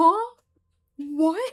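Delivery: very loud, high, obvious, baffled, confused outburst. Imitating his reactions to being told nonsense: imitating a confused reaction. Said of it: "this very obvious confusion in his voice".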